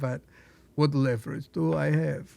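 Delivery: attempted put-on Ukrainian accent. After a failed first try, the speaker retries the line as Volodymyr with a Ukrainian accent. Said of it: "That was a little better".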